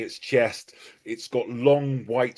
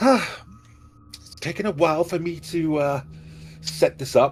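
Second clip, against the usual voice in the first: put-on higher-pitched dwarf girl voice; 5 semitones higher than usual. A magic mouth message speaks out as the lid lifts: dwarven girl voice. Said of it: "it's the voice of the dwarven girl".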